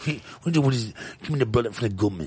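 bad low, soft South African accent. Trying out accents with the others, saying a line in a South African accent. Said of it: "South African".

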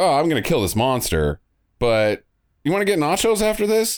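mock nonchalant, offhand tone. Retelling a movie scene, quoting the hero: imitating a nonchalant character. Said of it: "he's very nonchalant about it".

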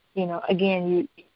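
ordinary talk, nothing marked

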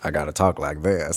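speaking like a Southern gentleman. Describing a radio play role and showing its voice: Sam Wainwright Southern gentleman voice. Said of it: "this kind of Southern gentleman".

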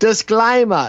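put-on very high-pitched Australian accent. Grovelling with a disclaimer, in a Sean Surplus Australian accent. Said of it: "in my best Sean Surplus Australian accent".

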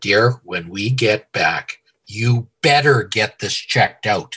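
put-on firm, insistent tone. Retelling what his wife told him about his foot: imitating wife's telling-you tone. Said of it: "your wife tells you in that tone of voice".

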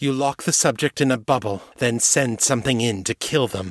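ordinary delivery, nothing marked

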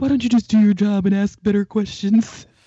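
loud call-out from off to the side. Retelling what someone in the background said: imitating Vernal. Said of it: "Vernal's in the background going".

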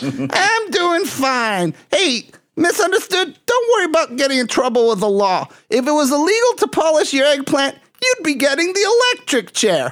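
very high, squeaky, sing-song puppet voice, pitch swinging wildly. Calling a guest on air as the bully puppet: Randy puppet voice. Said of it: "Are you gonna do all the voices".

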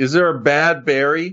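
emphatic stretched-out exclamation. Arguing that every berry is good, yelling. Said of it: "Why are you yelling at us about berries?".

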